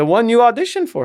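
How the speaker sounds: bad put-on Russian accent, very high-pitched. Retelling how she heard she got the part, in a bad Russian accent. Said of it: "trying to do her bad Russian accent".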